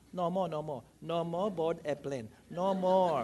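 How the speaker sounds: put-on strong Cantonese accent, very low. Quoting the check-in counter girl while the late passengers pleaded, strong cantonese accent. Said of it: "in her strong Cantonese accent".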